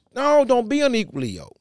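put-on sarcastic voice. Acting out Paul defending his ministry to the church: imitating Paul, sarcastic. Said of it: "he just really sarcastic".

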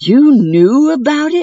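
terrified, confused exclaiming, loud and high. Narrator reads a character questioning others in the mansion, exclaiming. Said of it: "he exclaimed".

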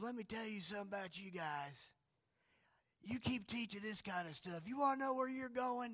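high-pitched Southern drawl. Quoting a caller to a call-in show, in a Southern drawl. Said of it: "Southern drawl".

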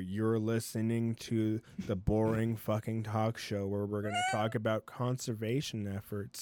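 deadest flat, droning monotone. Speaker mocks a boring talk show on conservation; mock monotone talk-show voice. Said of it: "just the most monotone voice ever".

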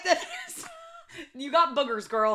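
high, loud voice breaking into laughter.

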